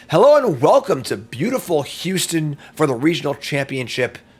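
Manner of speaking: loud, booming sports play-by-play announcer voice. Practicing play-by-play before commentating a weekend event, in announcer commentator voice. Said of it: "Gotta get my commentator voice going".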